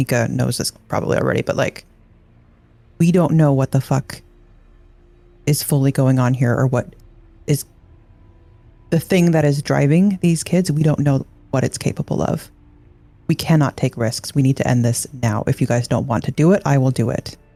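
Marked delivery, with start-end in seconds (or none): 3.0-17.4 quiet, lowered voice. In character, urging the group to end it now: lowered voice. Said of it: "lower my voice".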